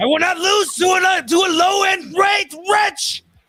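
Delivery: poor, very high-pitched, shrill shouting voice. Trading favorite lines with friends, doing a bad Vegeta impression. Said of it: "Oh, so bad".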